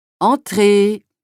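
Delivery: hoarse shout. Reading a story aloud, a voice calls someone in: hoarse shout. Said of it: "cria une voix éraillée".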